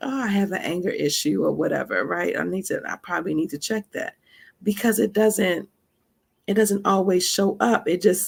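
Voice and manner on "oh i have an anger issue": ordinary talk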